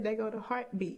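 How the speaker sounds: usual speaking voice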